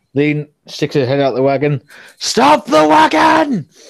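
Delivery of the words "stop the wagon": shrill, rasping, very high, rough bellow. Narrator voices Lean, head out of the wagon, calling to the driver: Lean bellowing. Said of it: "he's bellowing at the driver".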